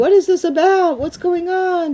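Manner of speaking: put-on high-pitched screaming. Telling a story, acting out the wife screaming at her husband: imitating a wife screaming. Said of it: "the wife's screaming".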